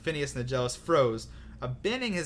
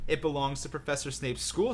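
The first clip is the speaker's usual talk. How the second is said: usual speaking voice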